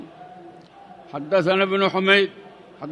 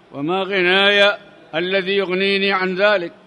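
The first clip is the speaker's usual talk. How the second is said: ordinary talk, nothing marked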